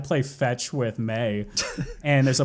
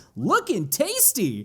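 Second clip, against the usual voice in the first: positive, energetic, upbeat cartoon hero voice, pitched up; 8 semitones higher than usual. Recalling a scene where a cookie is poked in his eye, Sonic the Hedgehog positive. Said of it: "basically Sonic the Hedgehog positive".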